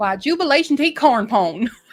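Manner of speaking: put-on backwoods hillbilly accent. A speaker warming up for a Southern accent, hillbilly accent. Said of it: "That's just hillbilly".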